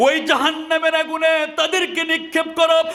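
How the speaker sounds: high, booming, commanding shout.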